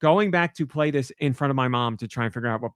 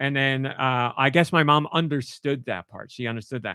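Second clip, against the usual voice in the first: usual speaking voice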